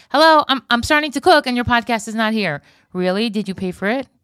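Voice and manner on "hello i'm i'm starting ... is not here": mock pushy, loud, demanding voice. Imitating a listener's message about the late episode: imitating a demanding listener. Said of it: "You guys are getting demanding".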